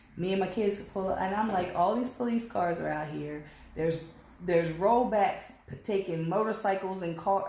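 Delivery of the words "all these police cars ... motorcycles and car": ordinary talk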